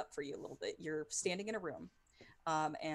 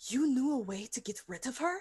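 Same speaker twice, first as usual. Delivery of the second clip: stunned, shocked, disbelieving, high raised voice; 6 semitones higher, 7 dB louder than usual. A narrator voicing a character questioning another character: shocked. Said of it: "Irina has this look of shock on her face".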